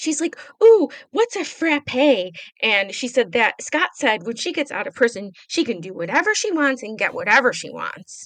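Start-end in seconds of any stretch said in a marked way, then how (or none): 0.6-2.3 put-on high childish baby talk voice. Retelling how a woman in the episode acts like a child: imitating her baby talk. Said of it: "She kinda baby talks a little bit".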